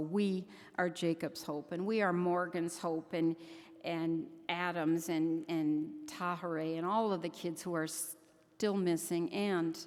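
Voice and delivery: ordinary talk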